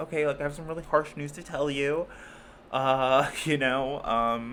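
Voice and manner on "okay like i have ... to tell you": put-on authoritative voice. Explaining a voice for delivering harsh news: Hilary Banks voice. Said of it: "I always call it the Hillary Banks voice, where it's like".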